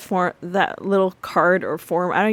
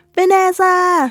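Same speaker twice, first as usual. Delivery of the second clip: very high, shrill, loud calling yell; 11 semitones higher, 6 dB louder than usual. Retelling how Denise calls for Vanessa: imitating someone yelling a name. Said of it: "Denise yells for Vanessa".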